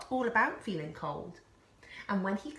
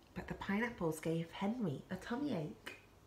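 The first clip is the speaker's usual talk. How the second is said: ordinary delivery, nothing marked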